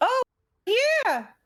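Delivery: very high, squeaky, little toad voice. Voicing a toad that answers a player: toad voice. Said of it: "I'll give the toad this voice".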